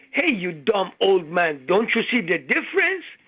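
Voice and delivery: acted, really angry, mad outburst. Retelling a joke where the lady gets really mad at the old man: imitating a really mad woman. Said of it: "She got really mad".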